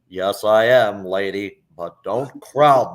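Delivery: put-on cowboy drawl. Retelling answering a customer in a John Wayne voice. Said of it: "Yes, sir, Mister Wayne".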